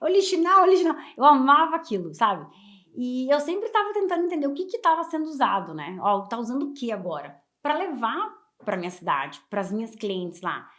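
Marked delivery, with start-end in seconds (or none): 0.0-0.9 high, loud shouted street-vendor hawking cry. Speaker recalls vendors shouting at the Brás market: imitating vendors shouting. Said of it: "aqueles chineses gritando lá".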